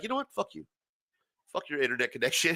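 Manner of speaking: goading, needling, mocking, provoking taunt. Retelling picking up the phone to annoy an uncle: retelling a taunt. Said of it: "just to piss him off".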